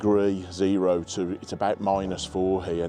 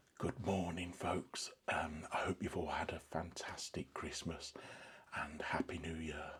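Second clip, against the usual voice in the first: hushed, lowered voice; 2 semitones lower, 17 dB quieter than usual. Greeting viewers just after four in the morning, not waking the family: keeping voice down. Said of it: "I'm keeping my voice down".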